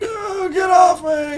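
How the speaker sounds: straining, wheezing, very high-pitched yell. A captive pinned down by the party cries out: wheezy shouting. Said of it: "He starts shouting as loud as his wheezy voice can".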